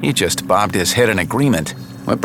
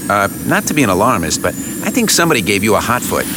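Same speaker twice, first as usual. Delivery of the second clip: usual speaking voice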